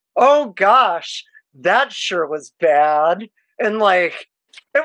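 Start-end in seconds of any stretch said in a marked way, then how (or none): 0.2-3.3 slow, feigned, pretend disappointment. Retelling pretending to be upset in a rival team's bar: imitating own fake disappointment. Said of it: "I would say it very, like".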